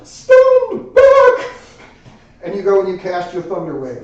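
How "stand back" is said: very high, very loud, bold, brave falsetto cry. Game master voicing a character as a spell is cast at a door, brave, strong falsetto. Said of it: "you hear a very brave and strong falsetto ring out".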